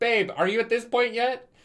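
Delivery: very high, thrilled, excited screaming. Recall being downstairs, calling to your babe about the book you both read, acting out screaming at someone. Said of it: "where I would be downstairs screaming at you".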